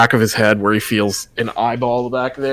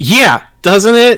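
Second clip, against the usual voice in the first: shrill, very high, loud yelling; 10 semitones higher, 6 dB louder than usual. In a scene, agreeing with the other character, yelling. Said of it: "don't know why you're yelling at me".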